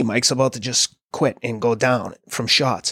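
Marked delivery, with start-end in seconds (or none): none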